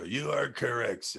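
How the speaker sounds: mock announcer delivery.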